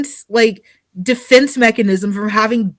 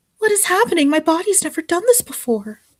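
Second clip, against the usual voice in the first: put-on submissive uke character voice, soft and high; 6 semitones higher, 6 dB quieter than usual. Acting out a short bit for listeners: uke voice. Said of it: "those few seconds of Uke voice".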